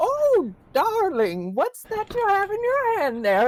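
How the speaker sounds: shrill, very high, swooping little voice. Voicing an old woman who spots a sandwich: shrill little voice. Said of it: "you hear a shrill little".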